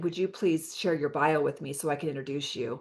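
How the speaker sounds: ordinary talk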